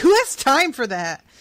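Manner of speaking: play-acted very loud, high, furious shout. Retelling what he said when they walked away: imitating someone getting mad. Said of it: "he gets real mad when they walk away".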